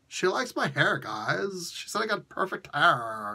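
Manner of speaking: put-on speaking in a Valley Girl accent. Quoting a comic's dialogue in Johnny Storm's voice: Johnny Storm in a Valley Girl accent. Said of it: "read Johnny Storm's voice in a Valley Girl accent".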